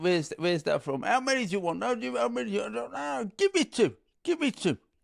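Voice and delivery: high, put-on Italian accent. Doing a bit during banter, in an italian impersonation. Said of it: "your Italian impersonations?".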